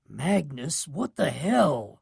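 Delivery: hushed, low, pressing urgent voice. Narrator confronting Magnus, who has just turned up, in a low, urgent voice. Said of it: "I say in a low, urgent voice".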